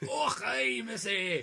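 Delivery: terrible fake Scottish accent, high and loud. Retelling how a movie's attorney turns up and greets someone, bad Scottish accent. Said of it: "that was the worst Scottish accent I've ever heard".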